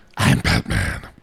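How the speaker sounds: gravelly superhero voice, ground out. Discussing casting a superhero lead, the speaker does a gravelly Batman voice.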